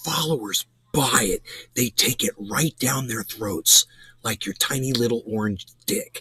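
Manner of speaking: hushed, muted whisper under the breath. Speaking directly to the man he is criticizing, choosing to keep it quiet, whispering. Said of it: "I hope I'm whispering enough for that".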